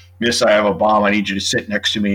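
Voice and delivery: normal talking voice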